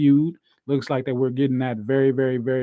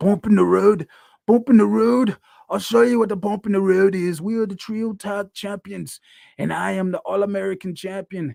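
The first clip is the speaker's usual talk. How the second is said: bad, rough British accent, pitched up; 7 semitones higher than usual. Retelling how the wrestler answered an interviewer: bad Pac impression. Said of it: "Probably a damn bad uh accent".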